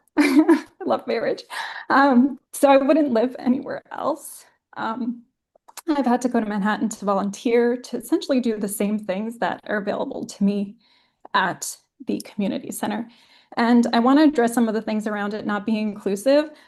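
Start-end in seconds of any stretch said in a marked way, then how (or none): 0.2-4.5 moved, full of feeling, slightly raised pitch. Speaking about New York, Bay Ridge and the community center; emotional. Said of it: "sorry, I'm getting emotional".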